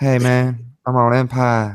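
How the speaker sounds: put-on low speaking voice. Explaining why not watching Empire: Terrence Howard low talking voice. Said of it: "his, like, really low talking voice".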